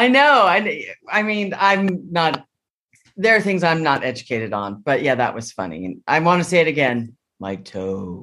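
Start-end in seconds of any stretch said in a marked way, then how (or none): 7.4-8.2 deep, hushed, very low, quiet monotone. Imitating how a quarterback says a phrase, flat monotone imitation. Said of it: "That's how he says it".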